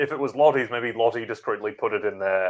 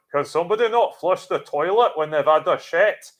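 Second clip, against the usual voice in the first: put-on horrible pitched-up Scottish accent; 8 semitones higher, 4 dB louder than usual. Retelling a mum interrupting two Scottish girls about to record in a viral video, in a bad Scottish accent. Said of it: "horrible accent job I just did".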